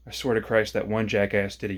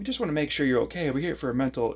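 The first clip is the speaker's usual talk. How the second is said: high, taunting, sarcastic mock-concern tone; 5 semitones higher than usual. Retelling what two men said at his doorstep, imitating their very mocking tone. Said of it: "in a very mocking tone".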